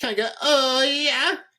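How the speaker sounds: very high slow moan. Speaker retells a nephew calling out a car window, imitating an orgasm voice. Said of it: "in like an orgasm voice".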